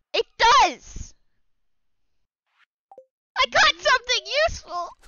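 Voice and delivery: excited, high, loud, triumphant yell.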